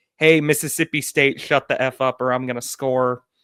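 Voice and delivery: ordinary talk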